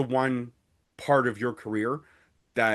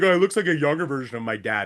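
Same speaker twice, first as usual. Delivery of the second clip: put-on sassy, snarky smart-aleck kid voice; 2 semitones higher, 3 dB louder than usual. Imitating a daughter's reply about a look-alike: imitating snarky daughter. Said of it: "because she's such a snarky little pain in the butt, she'd be like".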